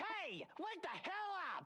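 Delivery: rousing, high-pitched shout. Waking another character who lies drugged in a cell: yelling. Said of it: "Don't gotta yell".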